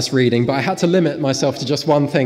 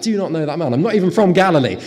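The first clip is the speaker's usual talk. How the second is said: swearing, cursing. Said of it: "he was swearing and cursing".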